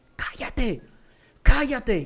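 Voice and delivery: mock crying out, full-voice scream, pitched high. Retelling how a tormenting spirit writhed and screamed: imitating someone screaming at full voice. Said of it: "se retorcía y gritaba a voz en cuello".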